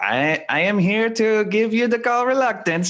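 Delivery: slow, high-pitched Eastern European accent. Speaker showing how he talks to himself to lighten things, Borat voice. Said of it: "I literally like talk to myself like in that voice".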